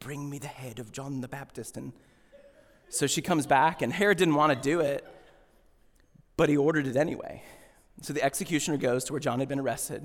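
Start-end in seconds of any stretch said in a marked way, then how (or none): 0.0-1.8 very soft, hushed, movie-style put-on British accent. Acting out her request to Herod as done in a movie, British accent. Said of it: "Like she with the British".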